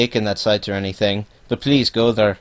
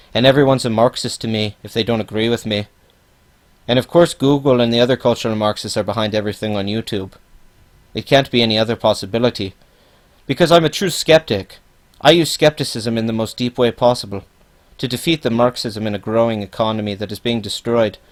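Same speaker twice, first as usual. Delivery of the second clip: ordinary delivery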